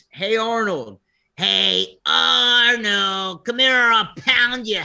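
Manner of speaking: pitch-swinging bully voice, name stretched. Asked to do the voice one more time: Harold voice. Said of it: "you do the hero voice one more time".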